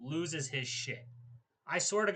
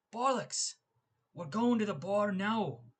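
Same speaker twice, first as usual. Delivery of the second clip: bad, rough Irish accent, pitched up high; 6 semitones higher than usual. Describing what Conor would say about going out, the speaker does a bad Conor accent. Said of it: "I can't do a very good Conor accent".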